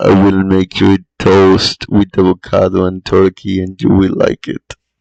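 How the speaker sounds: very loud, jokey, looming, menacing ominous voice. Joking with the other speaker, repeating a line they missed, jokingly ominous voice. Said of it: "I was trying to say it in an ominous voice tone".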